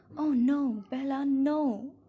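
very slow, drawn-out, loud, horrified cry. The angel's voice cries out to the narrator, crying out in horror. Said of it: "the angel's voice cried in horror".

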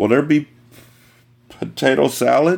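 words shaking through chattering teeth. Narrator, being moved toward the park in the cold, asks a question, shivering, teeth chattering. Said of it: "My teeth chattered and words shivered out of me".

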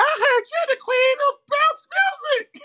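squeaky, very high put-on character voice. Retelling what a character said, imitating a character's voice. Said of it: "I'm mad at that voice".

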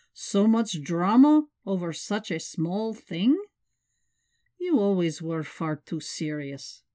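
ordinary delivery

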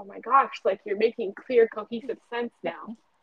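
ordinary delivery

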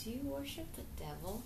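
put-on soft, hushed older woman's voice.

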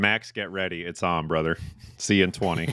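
plain

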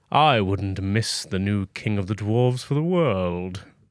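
menacing, sinister evil voice. A character greets his boss, not having noticed him: evil voice. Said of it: "he's using his evil voice".

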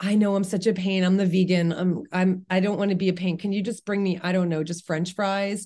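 apologetic, self-effacing, sorry-to-be-a-pain tone. Acting out a diner ordering at a restaurant: imitating a self-effacing, apologetic diner. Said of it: "In this very self-effacing, apologetic way".

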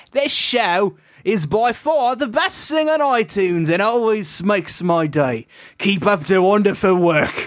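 improvised, made-up British accent from the east. Reading a listener review aloud as an improvised persona; made-up Eastern British accent. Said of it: "I'm from Eastern Britain".

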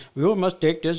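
put-on Indian accent. Retelling giving instructions to a work crew: Indian accent. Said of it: "I started doing an Indian accent".

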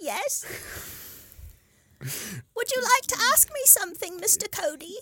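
very high-pitched little house-elf voice. Answering the interviewer, speak as Dobby in a Dobby house-elf voice. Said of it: "Can I interview you, Dobby?".

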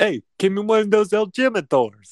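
loud, squeaky puppet voice. Reading a listener comment, voicing Jersey City Frankie in a Sesame Street-like voice. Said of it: "It sounded like a Sesame Street character".

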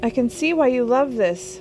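loud high yelling. In a fast car with the windows down, the angel calls to Crowley: yelled. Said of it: "the angel yelled".

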